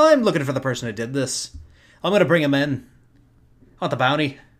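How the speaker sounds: put-on loud Irish accent. Speaker recounting playing Kieran, speaking in Kieran's Irish accent. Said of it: "so it was an Irish accent".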